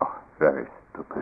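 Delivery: play-acted whispered, breathy, scornful and disdainful tone. Retelling what the teacher said after each koan answer: imitating a teacher's tremendous disdain. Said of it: "looks at me with tremendous disdain".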